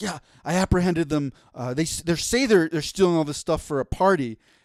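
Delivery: excited, eager, all worked up. Retelling an officer reporting to two older officers, imitating excited speech. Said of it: "He's all excited".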